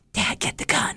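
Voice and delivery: breathy stage whisper meant to carry. Retelling what someone whispered to Dad after a late-night knock: stage whisper. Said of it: "stage whisper".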